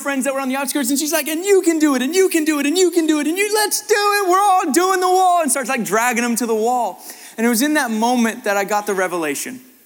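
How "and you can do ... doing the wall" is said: very high, giddy, excited screaming. Retelling how she urged her friends toward the wall: imitating an excited scream. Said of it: "she starts screaming excitedly and freaking out".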